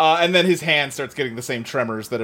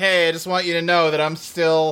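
ordinary talk

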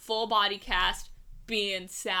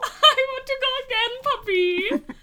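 put-on very shrill, very high, very loud little boy voice; 8 dB louder than usual. Joking about how young boys talk: imitating an eight-year-old boy. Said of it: "That's what all eight-year-old boys sound like".

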